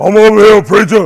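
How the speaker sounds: put-on deep voice. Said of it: "He right there trying to deep voice".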